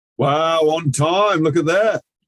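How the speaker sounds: big, hearty, booming voice at very loud volume. Greeting someone who just arrived on time, in a booming voice. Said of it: "My booming voice just uh, scared the living bejeebers out of you".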